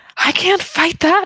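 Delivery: shrill, very high shouted yell. Retelling what he yelled back after being warned not to go off alone, retelling a yell. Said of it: "And he yells back at you".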